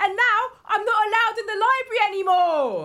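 very high-pitched, nonstop yelling. Sharing a gnome's curse at a support meeting: acted yelling. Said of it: "so I have to yell everything".

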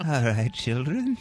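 put-on creepy horror voice. Introducing the show's top six haunted houses in Chicago; creepy Vincent Price voice. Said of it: "to do the old Vincent Price".

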